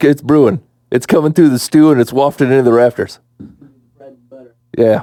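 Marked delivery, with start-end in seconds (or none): none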